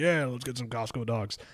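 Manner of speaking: eager, excited delivery in a manly-sounding voice. Retelling what the partner said about hot dogs: imitating partner in manly-sounding voice. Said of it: "more manly sounding than you?".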